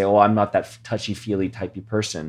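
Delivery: ordinary talk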